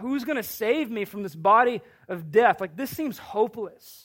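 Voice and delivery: ordinary talk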